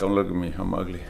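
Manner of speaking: teasing, playful, fake self-pitying tone. Joking to viewers about own looks: mischievous mock self-pity. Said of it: "Said the mischievous individual".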